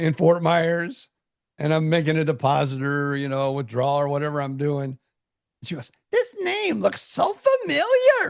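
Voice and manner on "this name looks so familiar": put-on very high, slow, drawn-out old lady voice.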